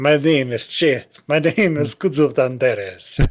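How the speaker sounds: hot Spanish-accented put-on character voice. Voicing a character whose voice is turning Spanish: hot Spanish character voice. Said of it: "he's turning into like like hot Spanish character".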